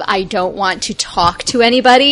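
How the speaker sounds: ordinary talk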